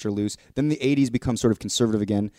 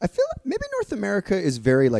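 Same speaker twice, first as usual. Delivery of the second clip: voice jumping very high, swooping; 10 semitones higher than usual. A podcast host talking about a show's real-world impact, in a high-pitched voice. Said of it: "I don't know why I went so high pitched there".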